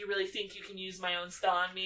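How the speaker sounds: normal talking voice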